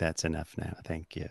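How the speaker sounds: breathy, hushed, soft and low actor voice. Retelling what Willem Dafoe said after talking briefly: Willem Dafoe impression. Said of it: "That's a good impression".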